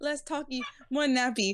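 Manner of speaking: animated cartoon-style character voice. Recapping the story, quoting King in King voice. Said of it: "That was King".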